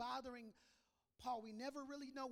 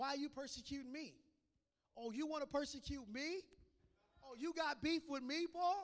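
put-on street slang voice, louder; 3 semitones higher, 7 dB louder than usual. Retelling a Bible story, quoting Jesus: Jesus in street slang. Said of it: "some street language".

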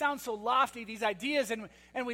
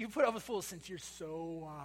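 sarcastic, mocking voice; 6 semitones lower, 7 dB quieter than usual. Showing how to hear Paul's words: sarcastic tone. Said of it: "you should hear the sarcasm in his voice".

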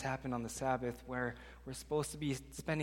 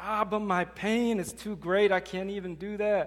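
put-on very loud groaning, drawn-out, pained moan; 7 semitones higher, 9 dB louder than usual. Retelling Moses and the serpent, voicing one of the dying people: acting out moaning in pain. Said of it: "maybe some of them were still moaning and groaning".

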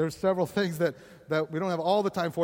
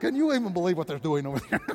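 put-on lisping voice, much faster. Quoting religious rulers to an audience, put-on lisping voice. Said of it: "religious rulers have a lisp".

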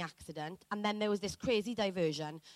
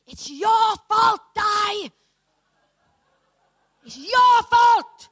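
very loud, shrill, drawn-out angry scream; 13 semitones higher, 16 dB louder than usual. Retelling how they screamed at Di while running late, retelling a scream. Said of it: "I screamed".

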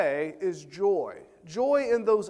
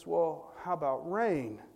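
gloomy, dragging, sorrowful, drawn-out low voice; 5 dB quieter than usual. Retelling a story where one character suggests an idea, imitating Sadness's melancholy voice. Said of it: "Sadness in her melancholy, drawn-out, low voice says".

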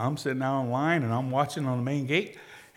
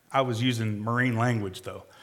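ordinary talk, nothing marked

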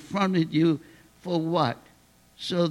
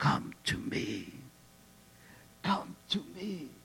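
sweet, low, hushed whisper; 12 dB quieter than usual. Voicing Jesus calling the listeners to come: whispering as Jesus. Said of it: "And Jesus whispers".

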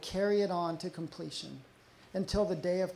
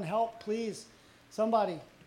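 restrained, acted-out calling out; 3 semitones higher than usual. Telling a story about a man stuck in a hole, retelling his yell for help. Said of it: "he's yelling".

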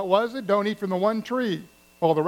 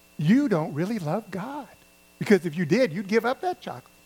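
put-on tempter voice. Preaching on temptation, voicing the devil's taunts: speaking as the devil. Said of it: "And he says".

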